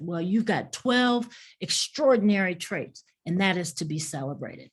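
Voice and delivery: ordinary talk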